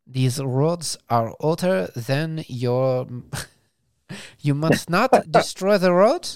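clumsy, bad put-on French accent. Voicing how Monaco would complain about the burnout, in a bad French accent. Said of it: "That's not a French accent".

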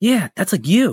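put-on high little-kid voice, childlike manner. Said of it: "in such a, like, little kid way".

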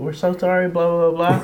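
begging, tearful pleading while crying. Retelling how the people in a crashed car pleaded with police, imitating tearful pleading. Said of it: "They were pleading, begging, crying".

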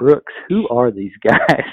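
confidential, conspiratorial stage whisper. Retelling a companion's question about the strangers: imitating a whisper. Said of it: "whispers at me".

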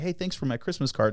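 play-acted, dry, sarcastic, mock-grateful tone. Retelling what he sarcastically said to somebody: retelling sarcastic thanks. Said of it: "he sarcastically goes to somebody".

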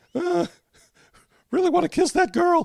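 put-on squeaky nerdy teen voice. Showing the voice people use for a teenager: squeaky nerdy teen voice. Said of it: "nerd, squeaky voice teen".

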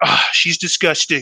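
put-on Boston-accented voice. Retelling what a parent said at holiday parties: imitating mom's Boston accent. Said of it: "She'd be like".

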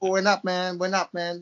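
faux, put-on American accent. Closing a show and showing off accents, in a put-on American accent. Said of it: "Listen to my American accent".

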